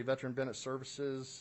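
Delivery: rushed, rattled-off, too-fast delivery. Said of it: "I'm talking too fast".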